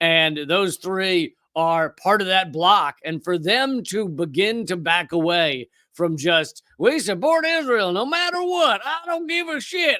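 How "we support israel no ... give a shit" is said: very high put-on American Southern accent. Voicing the stance of allied countries, switching into a put-on Southern accent. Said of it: "I'm going to do a Southern accent".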